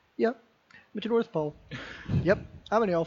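casual, offhand, nothing-special tone. Praising a film's comedy, quoting an actor's line: deadpan Bob Newhart impression. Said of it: "straight deadpan performance of".

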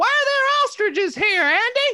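very high, loud, slow voice. Imagining a wrestling manager talking like Don Knotts: Don Knotts voice. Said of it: "Jimmy Hart sounds like Don Knotts".

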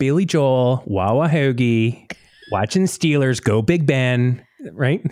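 Pittsburgh-accented speech. Urging the other speaker to do the accent, this speaker tries a Pittsburgh accent. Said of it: "You got to do the accent".

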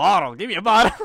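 very loud, high Southern American accent. Showing how a word is pronounced elsewhere: southern american accent. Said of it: "the southern".

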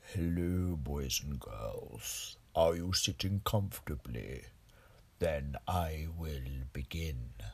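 very low, very quiet, slow put-on voice. Opening a movie review show, the speaker attempts a Vincent Price impression. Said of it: "try and do my best Vincent Price impression".

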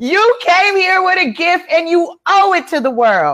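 very high-pitched, loud pulpit-preacher style shouting. A speaker repeating a point to their audience, yelling. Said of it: "Yes, I'm yelling".

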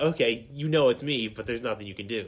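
ordinary delivery

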